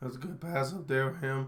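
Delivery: flat, low-energy delivery with zero excitement. Imitating someone calling a play with no energy: Tim Howard's flat delivery. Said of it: "he has no energy, no excitement, no pizzazz".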